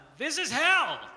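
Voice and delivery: frazzled, shrill yell at the top of the lungs. Retelling being stuck for hours on a hot highway: retelling a yell. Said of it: "I just yelled out".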